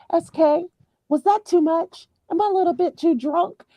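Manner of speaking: calm, easygoing chatter, pitched very high. Retelling how a woman suddenly stopped screaming, mimicking calm talk. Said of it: "just calmly talking just like us".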